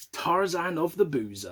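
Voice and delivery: ordinary talk, nothing marked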